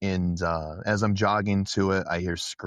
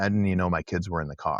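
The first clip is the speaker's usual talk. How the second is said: ordinary talk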